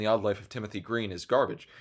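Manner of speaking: ordinary delivery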